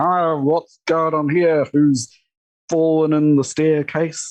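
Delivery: mock drunk, slurred speech. Retelling how a drunk fiance wandered the scene: imitating drunk slurred speech. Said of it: "sort of slurring his words".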